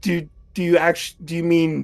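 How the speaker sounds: put-on flustered stammering. Playing a character who realizes he was confessed to: flustered stammering in character. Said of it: "a blank stare for a moment before the realization dawns and it's like".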